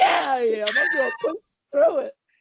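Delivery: mock loud yelling, high and swooping. Retelling answering a man's encouragement during a run, retelling a yell. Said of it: "I'm literally yelling at it".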